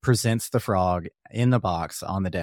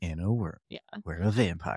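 movie trailer announcer voice, quieter; 6 dB quieter than usual. Imitating the movie preview guy from a show's intro: movie trailer narrator voice. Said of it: "the movie preview guy".

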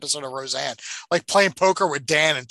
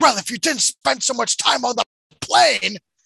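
mock, loud, raspy, high cartoon-villain scream; 9 semitones higher, 5 dB louder than usual. Retelling a cartoon scene as a character: imitating a character screaming. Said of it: "And then he screams".

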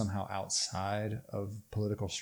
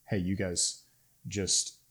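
ordinary talk

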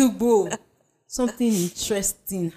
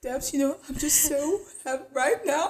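put-on tearful crying voice, higher and quieter; 4 semitones higher, 5 dB quieter than usual. Imitating a friend who was crying on the phone. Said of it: "that's how you sounded".

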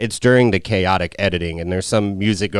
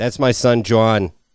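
plain Boston accent. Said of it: "I guess I just did one there".

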